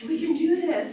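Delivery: very loud, very high, thrilled excited exclamation. Retelling a husband's reaction at a family reunion: imitating someone excited. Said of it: "he got so excited and he's like".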